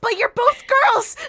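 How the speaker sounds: mock shouting. Retelling an anime scene where Hitomi shouts: imitating Hitomi shouting. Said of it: "she literally shouts".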